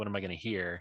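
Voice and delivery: ordinary talk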